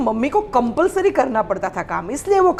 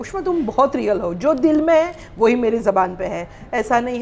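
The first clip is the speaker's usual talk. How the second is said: ordinary delivery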